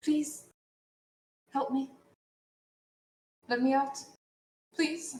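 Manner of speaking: put-on high, tearful little-girl pleading, near tears. Game master voicing a little girl behind bars begging the players, starting to cry. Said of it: "she's starting to cry".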